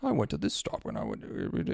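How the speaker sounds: whispered, smug, annoyingly calm, soft breathy voice. Imitating the guy from a Japan train station video: imitating a terrible, smugly calm voice. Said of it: "that terrible voice where he's like".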